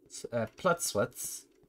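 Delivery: breathy, stronger Swedish accent. Reading a name aloud in a game: more swedish accent. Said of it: "I'd have to say it in a more Swedish accent".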